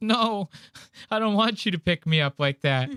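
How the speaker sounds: high-pitched voice on the verge of crying. Retelling a girl's reply to a guy asking to pick her up: retelling a girl near tears. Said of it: "She's like about to cry".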